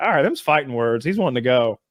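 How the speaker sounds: normal talking voice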